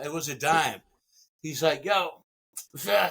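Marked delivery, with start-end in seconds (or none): 1.8-3.1 rough, raspy, rasping voice. Retelling what a guy on the block said: imitating a raspy voice. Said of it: "I remember his voice being real raspy".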